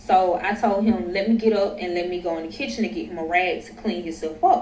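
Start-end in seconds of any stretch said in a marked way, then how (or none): none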